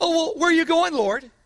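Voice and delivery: quick, high, doubtful, skeptical tone. Speaker showing how not to read Thomas's question, in a doubting Thomas tone. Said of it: "Don't just read it like the doubting Thomas".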